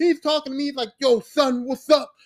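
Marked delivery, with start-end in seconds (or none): 1.0-2.1 put-on slurred speech, higher pitch. Retelling meeting someone who spoke to him: imitating slurred speech. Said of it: "He's all, like, slurring".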